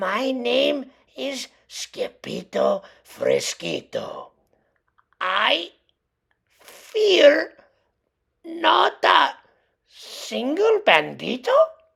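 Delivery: meek, fearful, timid, high, slow. A narrator reads the sword fighter's answer to the banditos, very soft voice. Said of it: "in a moi moi soft voice".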